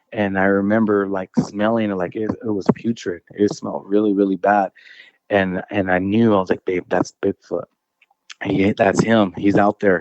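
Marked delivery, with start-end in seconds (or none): 6.6-10.0 put-on whisper. Retelling what he told his wife in the tent: retelling his own whisper. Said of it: "and we're whispering it".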